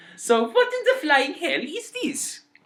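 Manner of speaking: put-on German accent, pitched way up. Gamers puzzling over a German word on screen: German accent. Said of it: "immediately goes into a German accent".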